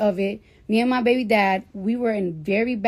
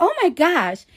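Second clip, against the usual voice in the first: put-on pitched-up Staten Island girl accent; 8 semitones higher, 4 dB louder than usual. Retelling the OB-GYN's reaction during the speaker's sonogram, in a Staten Island accent.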